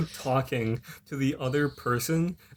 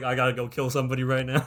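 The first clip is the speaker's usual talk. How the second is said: ordinary talk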